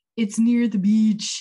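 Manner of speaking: put-on bad Jamaican accent. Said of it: "When he's pretending to be Jamaican".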